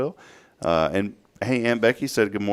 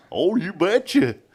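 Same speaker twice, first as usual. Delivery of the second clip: high-pitched, hokey, countrified cartoon voice; 7 semitones higher than usual. Trying a phrase in a country voice: sounding like Goofy. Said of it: "Sound like Goofy".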